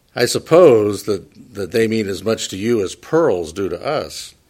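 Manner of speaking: ordinary talk, nothing marked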